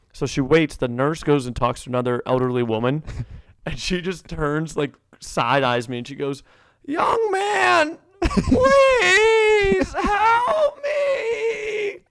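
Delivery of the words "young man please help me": very high, very slow, drawn-out pleading. Retelling an elderly woman side-eyeing him after the nurse leaves, mock pleading like dying. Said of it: "she's going like she's dying".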